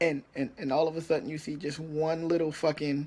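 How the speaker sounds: ordinary delivery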